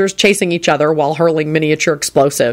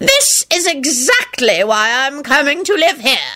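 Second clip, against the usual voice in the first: grand, loud, swooping declaiming proclamation; 9 semitones higher than usual. Grandpa John addresses his great-great-grandson Sirius, proclaiming loudly. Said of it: "he proclaimed loudly".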